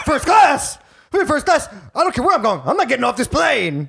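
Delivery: rowdy, brash, loud, swooping, rambunctious delivery. Impersonating the other speaker's loud, rambunctious role from a show: imitating a loud rambunctious guy. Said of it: "Can I impersonate your role on it?".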